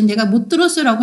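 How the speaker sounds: plain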